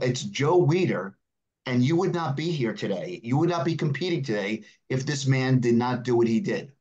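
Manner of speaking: usual speaking voice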